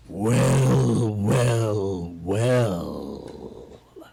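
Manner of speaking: very deep, slow, drawn-out monster dragon voice. Voicing a dragon that looks over all of you, in a deep dragon voice. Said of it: "Deep something".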